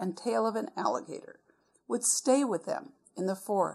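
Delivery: ordinary delivery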